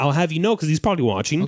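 normal talking voice

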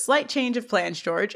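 normal talking voice

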